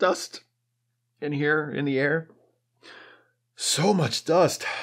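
stifled sob, choked up, holding back tears. Recapping Geordi and Data's goodbye scene, stifled sob, choked up. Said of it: "[stifled sob]".

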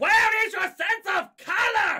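very loud, shrill, angry bellow. A narrator reads a teacher criticizing a student's work, bellowing. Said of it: "He bellowed at Peter Ashley".

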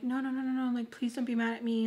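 acted pleading. Retelling their own words to him in an argument, mock-begging. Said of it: "Just, like, begging".

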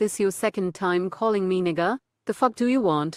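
put-on sassy AI assistant voice. Imagining the assistant answering after being greeted: Siri with an attitude. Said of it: "she gonna respond with an attitude".

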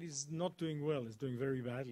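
ordinary delivery

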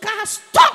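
high, commanding shout. Retelling how Daddy stopped the car: imitating Daddy shouting a command. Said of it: "the way Daddy shouted".

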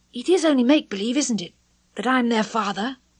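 a bit afraid, slightly frightened. Peter speaks to Wendy, a little scared. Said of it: "a little scared".

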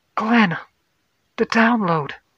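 very high, urgent shouting. Checking the ship's science console, calling out to a man, yelling. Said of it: "She yelled to him".

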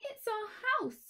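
very high, squeaking little mouse voice. Reading a storybook, the mother mouse answers a visitor, squeaking mouse voice. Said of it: "squeaked the mother mouse".

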